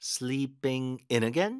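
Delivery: very slow, IN pushed hard with stress.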